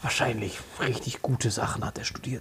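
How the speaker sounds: low unvoiced whisper under the breath.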